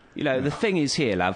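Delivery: attempted East London accent. Trying out an accent for a character, in a put-on Cockney accent. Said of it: "Maybe kind of Cockney".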